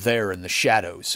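ordinary delivery

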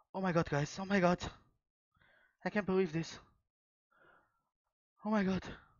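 high-pitched, trembling voice full of disbelieving excitement. After getting a first-edition 10,000 Dragons, addressing viewers, shaking with excitement. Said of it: "I'm shaking, guys, I'm shaking".

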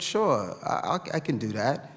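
ordinary delivery

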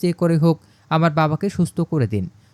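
usual speaking voice

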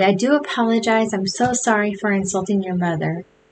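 ordinary delivery

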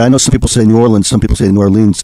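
plain

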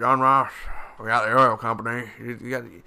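loud, put-on Texas oilman voice. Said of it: "doing that J R Ewan voice".

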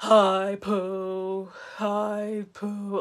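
gloomy voice, drawn out and stretched. Imitating Eeyore greeting Pooh from Winnie the Pooh: depressed Eeyore voice. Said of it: "he would just be so depressing".

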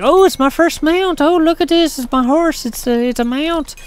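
high, gushing, mock excited voice. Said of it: "everybody's like".

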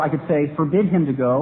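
ordinary delivery

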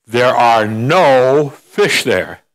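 very slow, stretched-out voice, "no" drawn out. Telling a joke about a man drilling on the ice, voicing the mysterious voice, booming. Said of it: "this booming voice".

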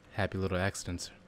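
low, soft, soothing voice. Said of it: "He's got that soothing voice".

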